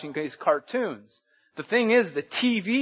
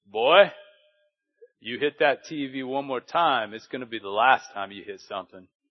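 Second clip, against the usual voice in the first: heavy deep dad voice, dropped low; 4 semitones lower than usual. Retelling what his father said to him as a boy, imitating a deep voice. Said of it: "and he had this deep voice".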